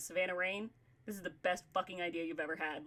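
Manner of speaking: play-acted grave, earnest, dead-serious fatherly tone. Retelling a dad's reaction to a show idea: imitating dad's serious tone. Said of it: "my dad got so serious, and he went".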